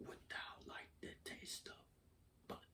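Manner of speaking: creepy, hushed, proper-sounding whisper. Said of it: "it's in the creepiest voice you ever fucking heard".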